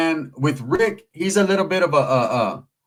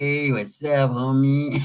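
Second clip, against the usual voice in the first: very slow, stretched, drawn-out drawl; 2 semitones lower than usual. Speaker shows how a man in an upcoming interview talks, imitating a slow drawl. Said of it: "He's going to be all slow and shit like".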